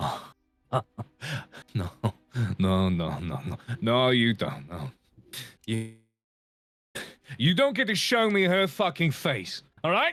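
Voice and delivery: put-on drunken speech, drunk-sounding. Playing a still-drunk man pulling his sword back, drunk. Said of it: "You can tell this man is still drunk".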